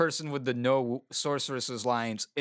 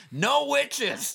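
put-on sudden, very high, rasping, rough yell; 12 semitones higher, 3 dB louder than usual. During a discussion about liability, someone comes out and yells; retelling a yell. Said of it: "just yells".

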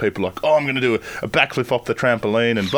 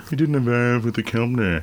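put-on sarcastic voice. Trading voices in conversation, doing a Nigel Farnborough voice. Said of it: "Sound like Nigel Farnborough".

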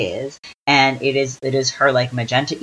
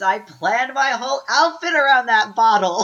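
very high, mock screaming; 10 semitones higher than usual. Speaker retelling a scene they watched, imitating Margot screaming. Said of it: "Margot screams".

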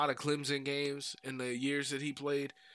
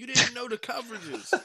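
high, yelled, scolding voice; 9 semitones higher, 4 dB louder than usual. Retelling a player yelling at the camera: imitating someone yelling. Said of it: "Brandon Marshall yelling at the camera saying".

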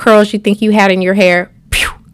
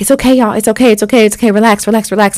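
imitated soothing, calming, reassuring tone. Retelling a frightening moment, the speaker quotes their mom calming the kids, imitating a soothing mother. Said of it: "my mom was like trying to calm us down".

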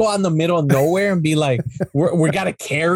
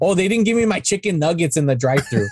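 plain

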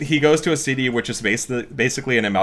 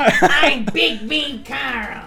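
very high, very slow, shrill drawn-out funny yell; 14 semitones higher than usual. Talking about a character who eats people's phones, yelling as Big Mean Carl. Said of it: "I just love a character that yells in a funny voice".

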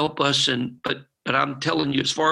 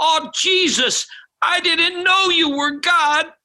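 mock very high, loud, tearful, weeping outcry; 5 dB louder than usual. Speaker retelling Juan crawling down the aisle in tears, imitating Juan's tearful cry. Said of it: "tears just dripping off his face, and he's crying out".

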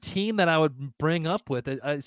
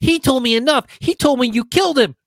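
put-on very high-pitched, loud little-boy voice; 10 semitones higher, 11 dB louder than usual. Reenacting a Luke Skywalker clip, saying his lines in a little boy voice. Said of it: "That's your little boy voice".

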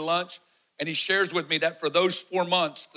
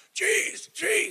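mock-choking, much higher; 13 semitones higher, 3 dB louder than usual. Retelling being held in a chokehold, the speaker acts out their own strangled words, imitating choking. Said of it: "He's in my ear screaming".

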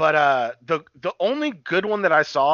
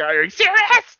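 high-pitched, loud squealing voice. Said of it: "her voice, like".

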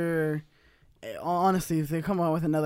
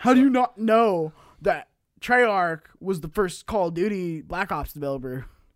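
loud, angry, outraged know-it-all rant; 6 dB louder than usual. Acting out people screaming at them over a game's developer, in an internet voice. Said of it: "That was my internet voice".

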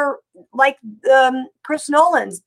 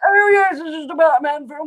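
put-on old codger talking out of the jaw. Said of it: "who talk out of the bottom of their jaws and go".

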